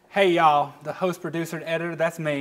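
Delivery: put-on Southern accent. Co-hosts pick a voice, then introduce the host, in a Southern accent.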